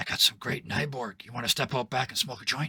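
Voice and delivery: barely audible, very quiet, sidling whisper. Voicing a party guest sidling past a player: very quiet whisper. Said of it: "very quietly whispers at you".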